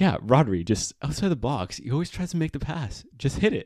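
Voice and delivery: bad put-on English accent. Retelling what both commentators said in the first half: bad English accent. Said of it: "in a much better English accent than I'm saying right now".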